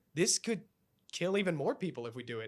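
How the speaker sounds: ordinary talk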